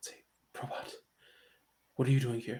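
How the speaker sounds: very quiet, secret under-the-breath whisper. Voicing Ura, who asks Probot why they are here: whispering. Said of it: "Ura's, like, whispering this".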